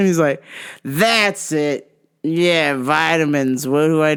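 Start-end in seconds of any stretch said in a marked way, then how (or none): 0.8-3.7 mock slurred speech, much slower. Retelling how a man he called sir answered, imitating slurred words. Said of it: "he was like slurring his words".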